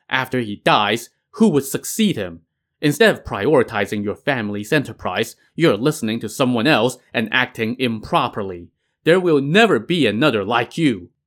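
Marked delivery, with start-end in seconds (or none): none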